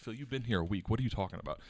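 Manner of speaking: ordinary delivery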